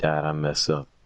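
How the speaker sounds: mournful, saddest voice, very low and soft. Retelling confessing to dad after he found the money, imitating the saddest voice. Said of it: "In like the saddest voice you can imagine".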